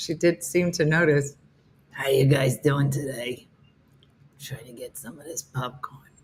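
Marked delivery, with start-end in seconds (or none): 1.9-6.0 low, rasping voice of a heavy smoker woman. Voicing the dog Lulu as a lady who has smoked all her life. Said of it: "Lulu sounds like a lady who has smoked all of her life".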